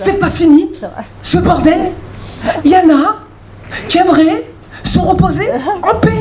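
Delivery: high, irritated, exasperated complaint.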